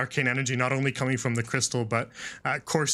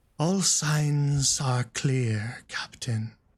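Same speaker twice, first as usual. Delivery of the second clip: put-on slurred, slow whispering. A masked character answers the captain without looking at him, slow slurred whisper. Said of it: "kind of in this slow, almost kind of slurred, whispered voice".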